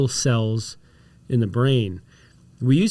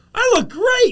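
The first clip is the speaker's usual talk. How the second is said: high, slow, delighted, amazed gasp. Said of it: "And I go".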